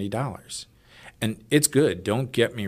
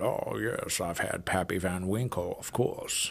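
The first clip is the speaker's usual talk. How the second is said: put-on boastful voice, quieter and slower; 5 dB quieter than usual. Mimicking people bragging about having had pappy van winkle, put-on bragging voice. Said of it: "Do that and, voice again".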